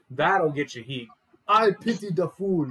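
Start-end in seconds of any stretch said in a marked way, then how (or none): 1.5-2.7 fake Nigerian accent, loud, slow and high-pitched. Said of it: "make him a Mister T doppelganger with the Nigerian accent".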